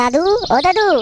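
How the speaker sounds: put-on high-pitched child voice.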